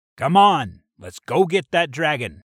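shouting. Walking out of the cave toward the others, shouting. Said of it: "Zeus shouted".

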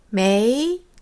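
메이 said with second tone, low then rising. Chinese tone lesson explaining the second tone: rising second tone on 메이. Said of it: "이성은 일성보다 낮은 음에서 시작해서 끝날 때쯤 의구심을 느끼는 듯 음을 올리시면 됩니다".

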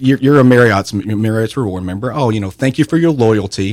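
usual speaking voice

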